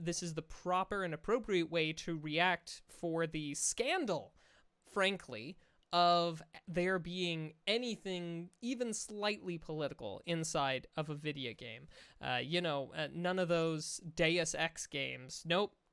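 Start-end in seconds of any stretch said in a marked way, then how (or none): none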